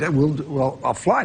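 ordinary talk

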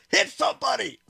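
frustrated yelling.

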